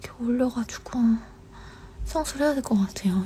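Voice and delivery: soft unvoiced whisper.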